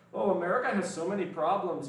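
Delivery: put-on Swedish accent that lands on a Canadian sound. Mimicking Swedes who come onto the channel, in an accidentally Canadian-sounding accent. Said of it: "I don't know why I sound Canadian there".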